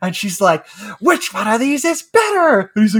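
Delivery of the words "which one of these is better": rising, high-pitched barking yell. Retelling a commercial where a woman at a chalkboard yells at adults: imitating a woman yelling at a class. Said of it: "she's yelling at them".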